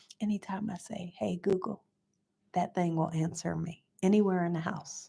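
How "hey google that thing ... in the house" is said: hushed, soft, low, quiet voice. Showing how the device responds, saying the wake words low. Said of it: "I'll say it low".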